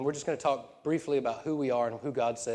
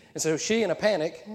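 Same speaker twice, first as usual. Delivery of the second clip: ordinary talk, nothing marked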